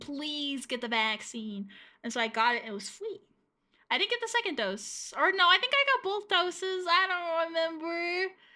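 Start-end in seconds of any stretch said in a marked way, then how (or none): 0.0-1.7 earnest, pleading, desperate begging voice. Retelling how vaccine providers urged people: imitating someone begging. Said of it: "on their knees begging".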